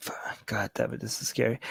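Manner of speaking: scared, very soft whispered curse word.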